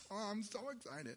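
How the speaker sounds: mocking impression. Retelling a Bible story, mocking Jehoshaphat. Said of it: "I know I'm mocking him a little bit".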